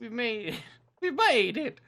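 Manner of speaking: very high, loud voice. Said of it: "You sounded like Alex there".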